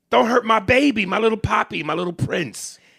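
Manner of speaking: put-on doting, babying, coddling motherly voice.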